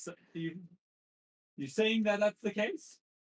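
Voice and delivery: a little fearful. A game narrator voices a character answering the players, in a fearful voice. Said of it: "you can kind of hear like a little bit like the fear in his voice".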